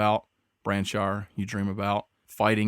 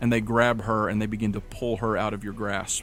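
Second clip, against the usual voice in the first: usual speaking voice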